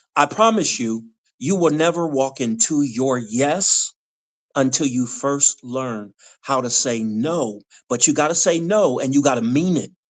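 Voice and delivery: ordinary talk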